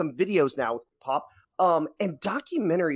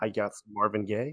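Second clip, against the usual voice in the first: mock sexy voice, much lower and quieter; 8 semitones lower, 5 dB quieter than usual. Joking to Ron after teasing him, in a mock sexy voice. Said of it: "my sexy voice".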